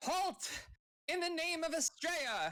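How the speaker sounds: high, ringing shouted yell. Role-playing a character chasing down a fleeing creature, yelling. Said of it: "I'm yelling like".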